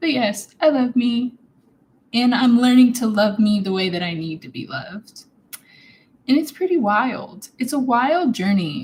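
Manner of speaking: choked up, fighting back tears. Sharing a personal reflection, choked up, holding back tears. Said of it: "I'm kind of choked up now cuz I'm literally just trying not to cry".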